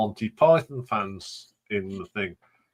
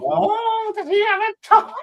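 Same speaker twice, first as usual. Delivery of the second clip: very high, comic put-on female voice. Retelling a sketch the group performed: Terry Jones-style female voice. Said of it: "I sounded so much like Terry Jones when I put on a female voice".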